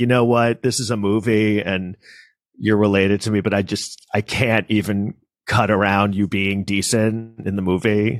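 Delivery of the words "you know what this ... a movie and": ordinary delivery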